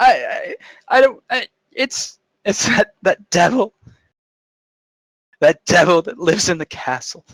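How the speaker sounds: breaking down crying. Voicing an older woman who names the devil in the castle: breaking down crying. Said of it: "breaks down at the rest of it".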